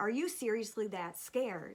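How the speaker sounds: put-on condescending, talking-down tone. Retelling a best friend's question: imitating a friend talking down. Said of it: "she's talking to me like I'm a child".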